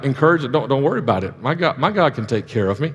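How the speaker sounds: normal talking voice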